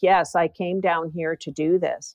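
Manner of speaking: ordinary delivery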